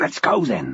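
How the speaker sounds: very low hiss. [name], getting into the back of Helen's car, hisses like a bank robber. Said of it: "he hissed in the manner of a bank robber".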